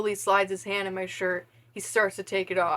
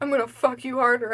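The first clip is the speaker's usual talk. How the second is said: sharp, snapping tone, higher pitch; 4 semitones higher than usual. Reading old fan fiction aloud, a line snapped back sharply. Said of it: "I snap".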